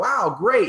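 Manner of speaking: acted-out excited, eager voice, high-pitched. Retelling a customer's call asking for another bottle: imitating own excited reply. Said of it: "I got all excited".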